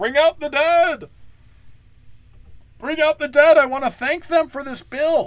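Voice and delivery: shrill, very high, loud put-on scream. Acting out someone who wanders aimlessly and calls for the dead, screaming like a Monty Python skit. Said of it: "I'm screaming for the dead like a Monty Python skit".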